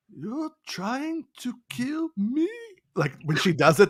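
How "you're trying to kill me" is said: put-on very high, slow little-kid actor voice. Retelling a daughter's Forrest Whitaker impression. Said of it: "she does a really great Forrest Whitaker".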